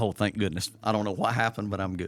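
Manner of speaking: usual speaking voice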